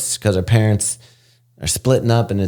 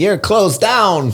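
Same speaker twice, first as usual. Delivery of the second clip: very high, comic, put-on Christmas accent; 11 semitones higher than usual. Retelling a movie plot, quoting the congresswoman in a put-on Christmas accent. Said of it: "What accent just happened?".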